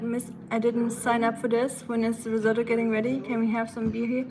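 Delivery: ordinary delivery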